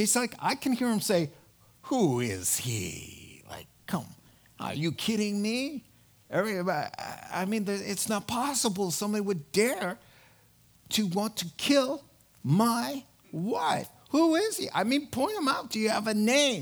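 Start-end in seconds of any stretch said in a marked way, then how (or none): 1.8-16.6 stunned, incredulous, swooping can't-believe-it disbelief. Retelling how a king reacts to a threat against his wife: imitating an incredulous king. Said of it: "he's incredulous".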